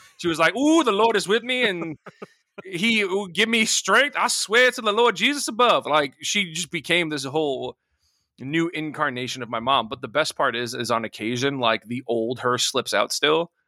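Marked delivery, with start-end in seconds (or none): 0.6-5.8 put-on very high voice, full sassy Southern accent.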